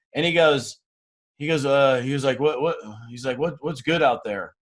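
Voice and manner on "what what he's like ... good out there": mock down, dejected, depressed-sounding tone. Retelling a phone call from an old acquaintance: imitating a depressed-sounding voice. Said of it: "that depressed sounding voice".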